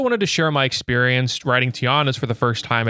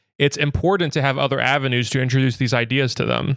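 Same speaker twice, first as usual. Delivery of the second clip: ordinary delivery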